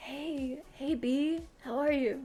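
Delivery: slow, soft, hushed half-whisper, breath only. A game narrator voicing a character greeting the player, half-whispering. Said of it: "Like whispering, hush hushed".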